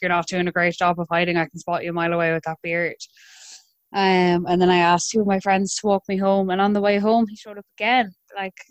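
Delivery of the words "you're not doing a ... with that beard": ordinary delivery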